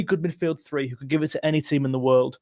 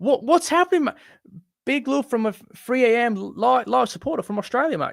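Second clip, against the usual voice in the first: high-pitched, bad fake Australian accent; 8 semitones higher than usual. Thanking a supporter from Australia, the speaker tries a bad Australian accent. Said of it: "I can do that accent, kind of. That was terrible".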